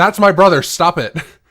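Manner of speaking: loud, shouted, pleading yell. Retelling how his sister yelled at the men beating him up, retelling a yell. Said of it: "And his sister yells".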